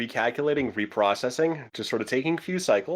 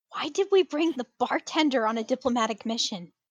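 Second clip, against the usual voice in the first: very high, private sidelong aside; 11 semitones higher than usual. Narrating a game, Kendra sidesteps toward Marcus to ask him, in a hushed voice. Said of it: "says in a hushed voice".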